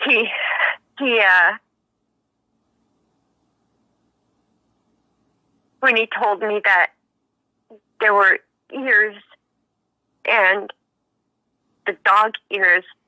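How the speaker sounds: shaky, trembling, emotional voice. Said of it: "I'm getting a little shaky".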